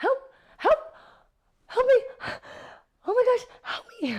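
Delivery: put-on very high, shrill, loud pleading cries. Retelling being followed around a liquor store on camera: mock begging for help. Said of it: "I was like begging for help".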